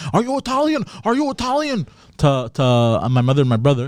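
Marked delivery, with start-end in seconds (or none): 0.1-1.9 put-on shrill, very high, insistent, demanding repeated yell. Retelling what a tow truck driver shouted at family: imitating someone yelling. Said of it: "he was yelling".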